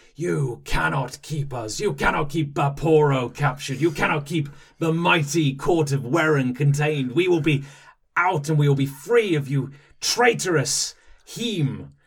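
grandiose, high, loud roaring bellow. As his fellow kith roar, Vaporo shouts at his captors, shouting, roaring. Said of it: "and again none of his attention is directed at you, / and you hear kind of like [name] kind of roaring".

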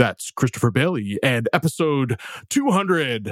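best radio announcer voice. Host closing out episode 200 of the show; radio announcer voice. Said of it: "in my best radio announcer voice".

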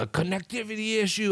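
very high-pitched yelling. Speaker retelling calling an automated line about his connection, retelling yelling at a machine. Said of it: "I'm yelling at it and shit".

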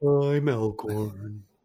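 put-on downtrodden voice. Introducing oneself by name: sounding like Eeyore. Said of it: "I kinda sound like Eeyore".

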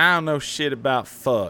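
put-on Southern accent. Quoting a favorite line by a character from a show, imitating a character's southern accent. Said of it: "she has a sick, like, Southern accent".

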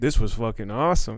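ordinary talk, nothing marked

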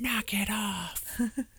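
very high yelling under the breath, whisper-yell. Describing a funeral scene from The Other Guys, retelling Michael Keaton's whisper-yell. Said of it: "yelling at them, but he's whispering".

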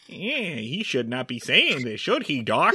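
cartoony sidelong aside, tossed off. Retelling a background character's look to the camera: Looney Tunes style aside. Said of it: "a Looney Tunes kind of aside".

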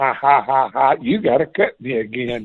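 put-on laughing voice. Voicing the composted yard taunting him from outside: imitating the yard laughing. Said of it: "I can hear it outside laughing, saying".

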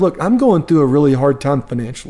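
plain

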